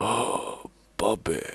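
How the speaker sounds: put-on accented dad voice with a Korean accent. Retelling a comedian's impression of his dad: imitating a dad's accent. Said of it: "when he does an impression of".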